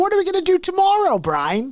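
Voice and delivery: very high cartoon voice swooping up and down. Doing an impression for viewers to guess the show: Pinky voice. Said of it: "I'm gonna do an impression".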